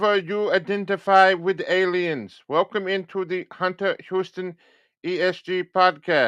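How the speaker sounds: put-on, possibly German accent. Podcast host trying a different show opening: possibly German accent. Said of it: "I don't know if that was a German voice or not".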